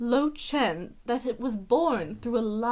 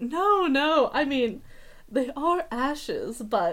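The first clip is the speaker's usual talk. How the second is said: acted, slow speech through laughter; 2 semitones higher than usual. Voicing a character who laughs while answering a question: laughing while talking. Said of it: "she laughs and she's like".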